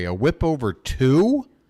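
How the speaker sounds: word "two" stressed with a rising tune.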